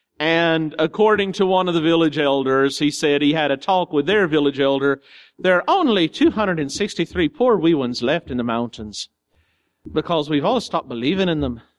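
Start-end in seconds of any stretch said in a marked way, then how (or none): 5.4-11.6 amateurish attempted Irish accent. Quoting what a village elder said, in an attempted irish accent. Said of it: "I don't know if that's Irish accent, but I tried".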